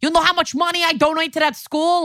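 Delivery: over-the-top cartoonish New York accent, pitched very high. Describing the Solomon household, the speaker imitates the dad; cartoonish New York dad. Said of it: "a full cartoon character of a New York person".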